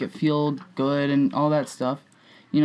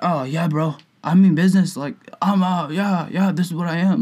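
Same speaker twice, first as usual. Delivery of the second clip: put-on drunk bro voice, higher; 2 semitones higher than usual. Speaker acts out a drunk dude telling a fishing story, drunk bro voice. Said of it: "I don't know why I'm making that voice".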